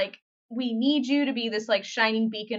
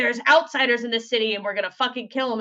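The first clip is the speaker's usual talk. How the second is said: usual speaking voice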